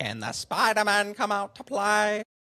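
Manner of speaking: very high cartoon villain voice. Asked to do their best Green Goblin impersonation, the speaker gives it a go. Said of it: "do your best Green Goblin impersonation".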